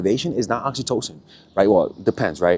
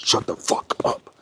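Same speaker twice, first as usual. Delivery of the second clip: slow, gritty, edgy, stressed voice; 4 semitones lower, 3 dB quieter than usual. Explaining how stressed parents sound to babies, imitating a gritty, edgy parent voice. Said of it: "like a grittiness to the voice".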